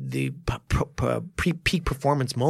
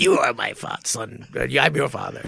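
put-on villain voice. Podcast host doing a bit again for a co-host, Darth Vader impression. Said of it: "my Darth Vader impression".

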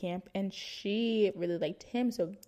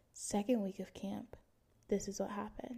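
whisper, much quieter; 10 dB quieter than usual. Telling listeners a personal story, whispering. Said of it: "I don't know why I'm whispering".

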